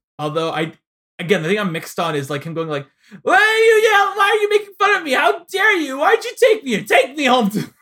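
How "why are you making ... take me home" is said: mock screaming, much higher and louder. Reviewing a segment, acting out a man yelling over others, imitating him screaming. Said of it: "just completely screaming over them constantly".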